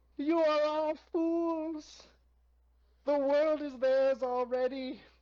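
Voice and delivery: put-on small, muffled, high voice, thick accent. Narrating to the group, voicing the halfling Bernard, muffled small voice with thick accent. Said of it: "really muffled this small voice with a thick accent".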